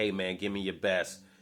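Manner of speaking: ordinary talk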